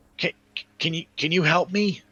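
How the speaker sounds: very high, hesitant, halting voice calling across distance. Voicing a girl calling out to the party from thirty feet: calling out for help. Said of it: "she kind of calls out".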